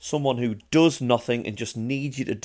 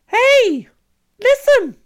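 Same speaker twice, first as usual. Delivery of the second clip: shrill, very high, very loud shout; 12 dB louder than usual. Answering a request for an impression, doing a Navi impression. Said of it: "can you do a Navi impression?".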